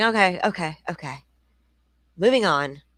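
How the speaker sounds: patronising, mocking, condescending, dismissive tone. Mocking how she answered a grieving parent: imitating a condescending tone. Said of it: "She's just like".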